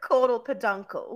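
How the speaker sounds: strong fake British accent. Recalling studying fish parts together for a test, in a hardcore British accent. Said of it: "British accent, hardcore British accent".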